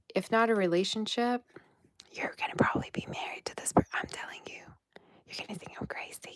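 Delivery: soft, hushed whisper.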